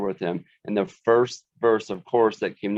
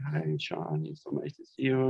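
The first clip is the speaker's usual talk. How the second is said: put-on tearful voice, higher and quieter; 5 semitones higher, 8 dB quieter than usual. Retelling a widow's greeting at a funeral: imitating someone crying. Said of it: "she's crying. She's like".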